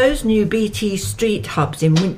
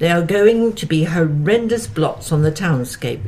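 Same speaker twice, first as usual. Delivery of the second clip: ordinary talk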